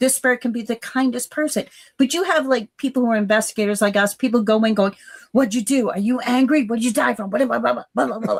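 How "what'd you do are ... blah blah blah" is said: mock barking delivery. Imitating investigators questioning a spirit: imitating investigators barking questions. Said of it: "barking like that".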